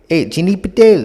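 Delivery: put-on light, teasing Indian accent. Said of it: "mocked his, um, his, uh, accent".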